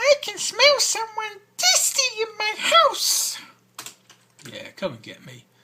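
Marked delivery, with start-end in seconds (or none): 0.0-3.4 shrill squeak, very high, very loud and slow. Narrating an adventure, voicing a distant figure in the house: high squeaky voice. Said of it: "you hear a high squeaky voice say".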